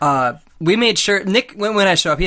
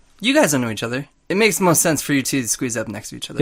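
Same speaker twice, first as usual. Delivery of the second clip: normal talking voice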